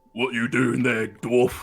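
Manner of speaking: intimidating, threatening, menacing voice. Asked by another player for their best intimidating voice, confronting a dwarf. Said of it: "give me your best uh, intimidating".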